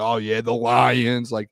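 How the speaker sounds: slow, unimpressed, dismissive drawl. Complaining about the hosts of that show, the speaker imitates their mock-dismissive tone. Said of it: "Like that tone. I hate that tone".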